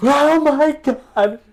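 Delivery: loud, very high screaming cry. Retelling how a woman rolled her ankle and lay on the ground downtown, retelling a scream.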